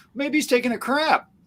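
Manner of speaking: very high, snide, mocking sarcastic tone. Retelling a bible story, what the other prophet says: imitating a sarcastic remark. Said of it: "he sarcastically says".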